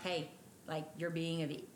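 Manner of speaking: ordinary talk, nothing marked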